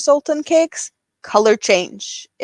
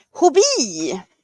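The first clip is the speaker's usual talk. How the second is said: put-on Swedish accent, higher pitch; 4 semitones higher than usual. Imitating how a Swedish bingo host says a phrase: imitating Kristina. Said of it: "That's how she says it".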